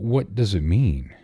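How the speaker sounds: high, trembling, wavering, quavering voice. Reading a sea story aloud, a sailor asks about a signal: quavering, trembling voice. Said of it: "in a quavering, trembling sort of voice".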